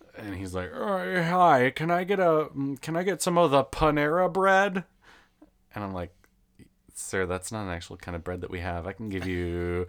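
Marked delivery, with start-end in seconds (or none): 0.8-4.9 put-on old man voice, much higher, slower. Retelling a caller heard over the speaker, imitating an old man. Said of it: "you can tell that it's like this old, old man".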